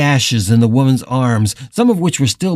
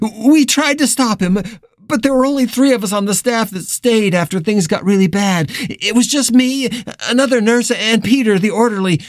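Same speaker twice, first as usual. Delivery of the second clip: frantic, near-hysterical babbling, pitched high; 9 semitones higher than usual. Nurse chattering to Carla as she starts up the stairs, on the edge of hysteria. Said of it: "She was on the edge of hysteria".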